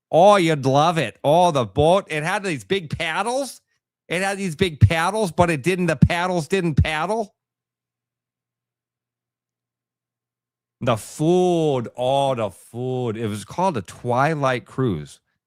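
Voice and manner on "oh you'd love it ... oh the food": put-on high-pitched Wisconsin accent with "food" drawn out. Retelling what a lady on a boat said: imitating a Wisconsin accent. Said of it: "She talked like this".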